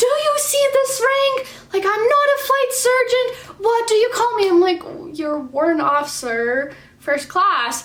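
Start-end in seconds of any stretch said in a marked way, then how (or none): 0.0-4.5 mock shrill, angry, very high-pitched shouting. Retelling what a warrant officer yelled at the speaker, retelling a hard yell. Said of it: "he f just yells at me really, really hard".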